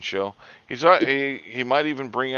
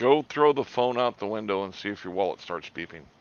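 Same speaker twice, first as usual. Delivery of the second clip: plain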